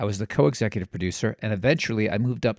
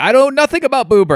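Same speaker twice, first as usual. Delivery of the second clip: put-on frantic, cornered voice, very high and loud; 13 dB louder than usual. Retelling own reply to the host on the phone: imitating own frantic reply.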